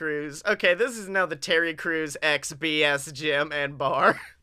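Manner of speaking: usual speaking voice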